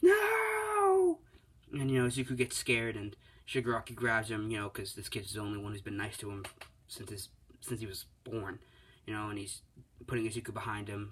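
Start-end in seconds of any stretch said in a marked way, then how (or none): 0.0-1.2 very loud, very high, long drawn-out shriek. Retelling a hero being dragged away: imitating a scream. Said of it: "he's screaming".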